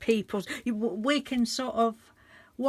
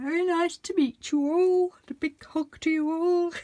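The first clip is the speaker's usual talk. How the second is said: goofy, silly, high put-on voice; 7 semitones higher than usual. Greeting new subscribers while talking in a stupid voice. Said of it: "Why I'm talking in a stupid voice".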